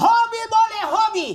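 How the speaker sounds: put-on scolding tone.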